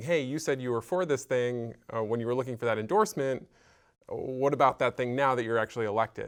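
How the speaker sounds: plain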